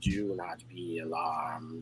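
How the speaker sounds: very low, hushed, strange otherworldly alien voice. After a droning noise, a voice suddenly comes in: strange alien-type voice. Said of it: "this strange sort of alien type voice".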